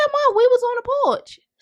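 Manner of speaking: put-on high, innocent-sounding kid voice.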